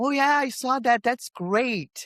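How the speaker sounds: high, easygoing, calm, relaxed voice. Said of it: "I love that [name] is so calm".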